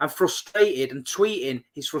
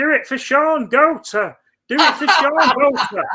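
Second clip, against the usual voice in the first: tiny, squeaky, very high little voice; 10 semitones higher, 7 dB louder than usual. Mocking a guy who uploads videos from his bedroom: imitating his little voice. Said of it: "he stands there with his little voice".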